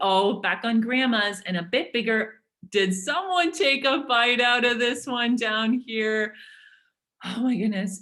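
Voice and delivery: sarcastic, put-on fawning, gushing delight. Parodying a recipe site's photos to make a point: put-on sarcasm. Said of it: "I'm being a little bit sarcastic here".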